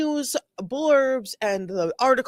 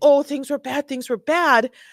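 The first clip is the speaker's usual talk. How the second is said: sobbing, whiny, put-on weepy fake crying; 5 semitones higher than usual. Mocking an interview answer on a crime news network: mock crying. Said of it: "But crying and just saying".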